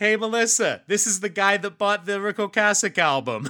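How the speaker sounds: very high, very loud holler. Recounting telling a man the story, imitating someone yelling back. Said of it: "he just yells back".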